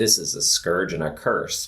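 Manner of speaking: plain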